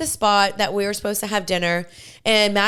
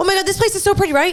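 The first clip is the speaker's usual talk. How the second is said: very high, loud, rattled-off, rushed nervous gushing; 11 semitones higher, 5 dB louder than usual. Retelling how Riley covered at a restaurant check-in, imitating Riley talking fast. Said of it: "Riley's talking so fast".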